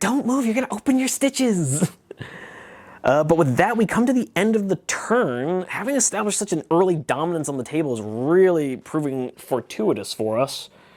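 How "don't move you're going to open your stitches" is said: anxious, worried, almost motherly tone, pitched up. The healer chases after a wounded man who keeps moving; very worried, almost motherly. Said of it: "with a very worried, kind of almost motherly".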